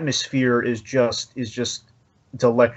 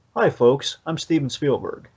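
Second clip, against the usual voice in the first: warm, urgent put-on voice; 2 semitones higher than usual. Retelling a director's welcome in a video: imitating Steven Spielberg, warm but urgent. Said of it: "there's a warmth, but there's an urgency amidst the welcome".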